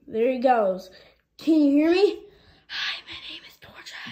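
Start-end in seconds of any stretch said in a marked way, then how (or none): 2.6-4.1 barely audible, very soft, breathy whisper. Testing whether someone wearing earmuffs can hear: whispering. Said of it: "I couldn't hear the whispering".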